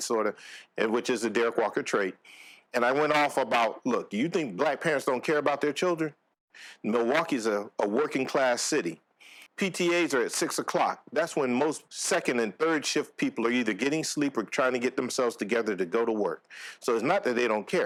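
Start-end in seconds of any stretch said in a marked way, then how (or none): none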